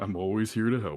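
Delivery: sarcastic, mocking delivery. Replying in character to another party member: sarcastic. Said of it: "Just kinda sarcastically".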